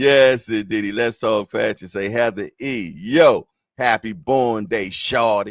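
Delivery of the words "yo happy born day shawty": put-on New York accent. Giving Heather E. a birthday shout-out, in a New York accent. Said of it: "New York accent".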